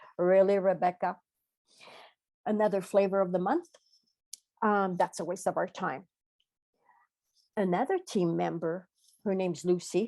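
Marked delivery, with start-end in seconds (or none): none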